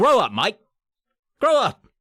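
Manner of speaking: sudden put-on Australian accent, slow. Mocking a movie they hated, sudden fake australian accent. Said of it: "Why did he get Australian all of a sudden?".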